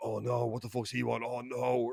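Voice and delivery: mock timid, slow, frightened fretting. Retelling how a friend reacted to a stranger approaching: imitating a scared friend. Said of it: "my British friend is a massive pussy about everything".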